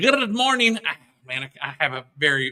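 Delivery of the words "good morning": put-on Irish accent, higher pitch. Greeting listeners on Saint Patrick's Day in a bad Irish accent. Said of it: "if I could say it in my Irish".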